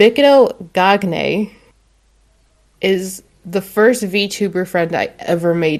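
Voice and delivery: slow, deliberate, each word carefully sounded out. Introducing a friend whose name they always mess up, speaking slowly. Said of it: "I gotta say this slowly".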